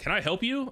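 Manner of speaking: put-on concerned voice. Retelling the fire chief's question outside the station: imitating someone sounding concerned. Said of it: "sounding concerned".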